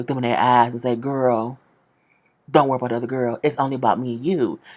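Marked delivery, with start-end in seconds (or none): 1.0-4.6 mocking, put-on, deep smooth-talker voice. Recapping a show, speaker acts out a man's line to the women, put-on deep voice. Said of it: "I'm gonna put my little deep voice on it".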